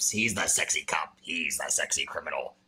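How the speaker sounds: very deep, very low, slow, drawn-out delivery. Describing the sexy cop character in a TV show: sounding like Danhausen. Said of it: "Why you sound like Danhausen?".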